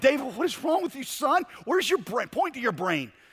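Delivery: high-pitched yelling. A coach retells yelling at a 12-year-old he pulled from the game, retelling a yell. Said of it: "I start yelling at him".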